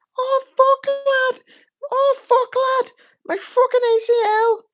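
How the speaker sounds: very high pitch, loud volume, slow pace. Imitating a fighter blaming his knee after losing: bad Darren Till impression.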